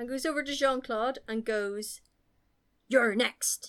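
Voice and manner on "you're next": mock menacing tone, louder. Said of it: "Takes it a bit thick".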